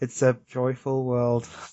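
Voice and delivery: completely unenthusiastic, half-hearted delivery. Imitating the way Ash says a line: imitating Ash, unenthusiastic. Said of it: "he's not enthusiastic about it at all".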